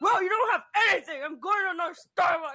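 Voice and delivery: irate, rude, high angry yell. Telling how a rude customer got mad at them, retelling a customer's yelling. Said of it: "started slowly yelling at me".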